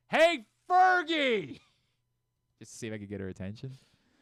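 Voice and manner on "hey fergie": play-acted very high, loud shout. Standing up to get someone's attention across a room, retelling a yell. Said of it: "I stand up and start yelling towards".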